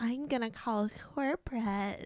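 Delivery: exaggerated soft, slow lady voice. Retelling what a woman said as she walked away, imitating the whitest voice ever. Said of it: "in the like whitest voice ever".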